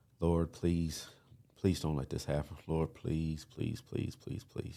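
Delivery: imitated desperate, begging, pleading tone. Retelling own past prayer to the Lord: retelling own begging and pleading. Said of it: "just begging and pleading".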